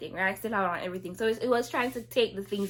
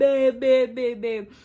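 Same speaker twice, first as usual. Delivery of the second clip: put-on screaming, louder, slower; 3 semitones higher, 8 dB louder than usual. Recounting crying and calling his name down the stairs, retelling her own screaming. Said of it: "I scream".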